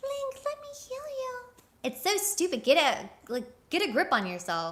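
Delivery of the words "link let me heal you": put-on very high, soft fish girl voice. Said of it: "in her Mifa voice".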